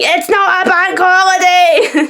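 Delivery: mock very shrill, very slow, drawn-out yelled scream. Retelling screaming at a radio advert: retelling screaming at the radio. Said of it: "I'm just screaming at it going".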